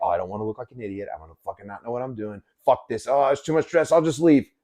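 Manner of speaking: downbeat, put-upon, negative complaining voice. Speaker acts out how someone with negativity in her voice talks: mock-negative voice. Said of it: "someone who has a negative in her voice is like".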